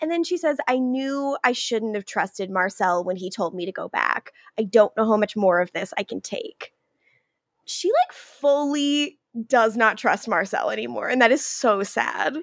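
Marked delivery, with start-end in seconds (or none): none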